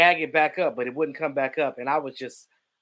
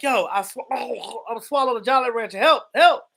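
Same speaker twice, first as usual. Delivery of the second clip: acted, frantic, loud, high panicked yell; 8 semitones higher, 5 dB louder than usual. Recounting reaching the kitchen where their mother was, retelling a yell for help. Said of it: "I'm yelling".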